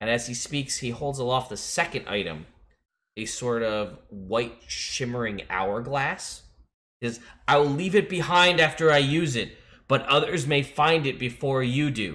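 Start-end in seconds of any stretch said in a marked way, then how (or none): 7.5-12.1 high, full-throated scream at the top of lungs. Voicing a robed figure calling to the heroes from a tower: screaming at the top of his lungs. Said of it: "he's screaming at the top of his lungs".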